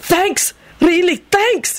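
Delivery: very high, gushing, eager, excited shout. Narrator voicing Benji reacting to an offer, excited yelling. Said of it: "He yelled".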